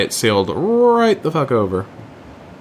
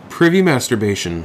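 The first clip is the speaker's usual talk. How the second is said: ordinary talk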